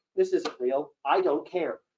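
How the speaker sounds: ordinary talk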